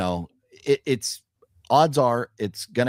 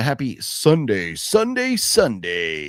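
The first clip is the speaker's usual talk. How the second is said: very slow, drawn-out, swooping monster-truck announcer call. Opening sunday greeting done in a booming monster-truck announcer voice. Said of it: "Monster Truck announcer voice".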